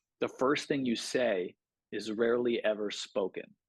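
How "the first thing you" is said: plain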